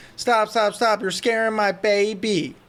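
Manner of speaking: frantic mock screaming, with the word baby drawn out. Retelling how a friend's mom screamed at a haunted trail host, imitating a mom screaming. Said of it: "the mom starts screaming at the host".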